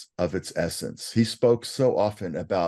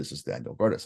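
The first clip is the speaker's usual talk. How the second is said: put-on very elegant, refined, polished British accent; 5 semitones lower, 5 dB quieter than usual. Retelling a phone call from a woman: very elegant british accent. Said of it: "a very, very elegant British accent".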